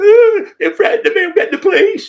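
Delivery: mock very high, very loud wailing, blubbering sob. Retelling how a man threatened to call the police: imitating someone crying.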